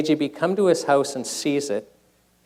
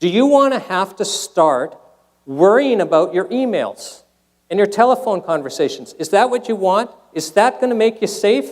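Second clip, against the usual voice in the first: angry, heated raised voice, pitched up; 6 semitones higher, 5 dB louder than usual. Warning listeners about monitored communications: angry raised voice. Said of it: "I'm getting mad here and raising my voice".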